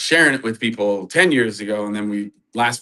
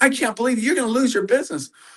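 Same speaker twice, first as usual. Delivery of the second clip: put-on yell, higher; 13 semitones higher than usual. Retelling a client's complaint about the price: imitating a client yelling. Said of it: "He starts yelling at me about the price".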